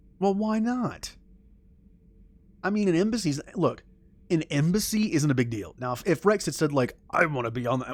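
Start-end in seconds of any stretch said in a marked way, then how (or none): 7.1-8.0 poorly executed, terrible gruff alien voice. Imagining what Rex might have said, in a bad Krogan voice. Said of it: "that was a terrible Krogan".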